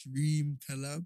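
slow, drawn-out talk. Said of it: "I feel like you're talking slower".

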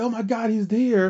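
high-pitched loud yelling. Recalling watching William Regal suddenly show up after a brawl, retelling a loud yell. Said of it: "I yelled out loud".

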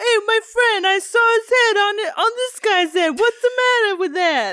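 cranked-up, high, loud New Jersey accent.

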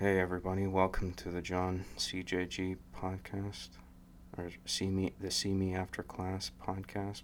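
weak, flat, lifeless, low-energy delivery. Showing how first podcast intro attempts sounded, in a flat, low-energy delivery. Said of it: "My first couple attempts at recording this sounded like this. ... it just sounds weak sauce right there. Because there's a certain energy that's behind the voice that's lacking".

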